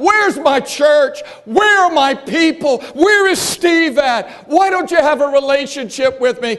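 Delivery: desperate, pleading, crying-out voice. Speaker acting out a quoted plea during a religious talk, acting out a pleading cry. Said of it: "Jesus cries out".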